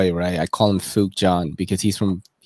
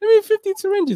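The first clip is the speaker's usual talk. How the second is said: squeaky, very high put-on voice; 3 dB louder than usual. Retelling a guy at Rite Aid buying syringes: imitating a man's high voice. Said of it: "He has a high voice and everything too".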